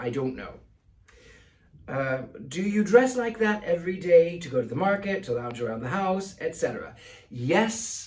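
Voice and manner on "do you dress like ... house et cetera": normal talking voice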